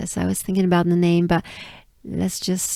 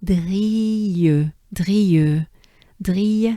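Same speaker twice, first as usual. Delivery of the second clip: French accent, drille drawn out with French R. Speaker coaching listeners to pronounce a word, French accent and French R. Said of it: "the word drill with a French accent and a French R".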